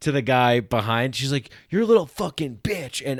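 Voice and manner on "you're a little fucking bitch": high, furious, play-acted raging, cursing shout. Telling a friend about a driver cursing at another driver at a light, you imitate an angry yell. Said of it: "she was so fucking angry".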